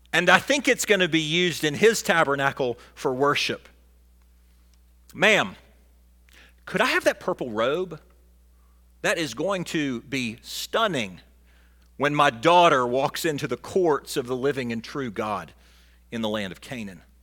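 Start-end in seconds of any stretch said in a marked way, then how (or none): none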